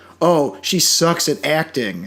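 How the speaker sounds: normal talking voice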